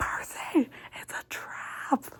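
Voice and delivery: hushed, breathy, whispered scream. Retelling a scene where a character screams a warning to Percy, imitating a scream. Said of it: "she starts screaming".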